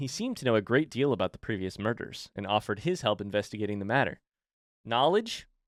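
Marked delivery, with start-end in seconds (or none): none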